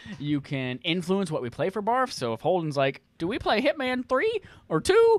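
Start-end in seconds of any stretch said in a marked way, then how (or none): 3.2-5.2 put-on very high-pitched, old grandmotherly voice. Describing a supporter perk, voicing a viewer's game-choice question like a grandma. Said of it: "I don't know why you're talking like a grandma".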